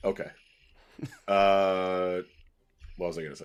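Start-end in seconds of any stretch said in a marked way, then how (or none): 1.3-3.5 serious voice. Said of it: "Don't get your serious voice out".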